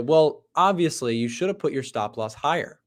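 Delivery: ordinary delivery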